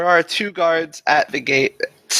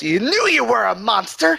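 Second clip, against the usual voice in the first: shrill, very high shrieking yell; 9 semitones higher than usual. Voicing a guard who thrusts his spear at a player: yelling guard. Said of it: "Kinda yells".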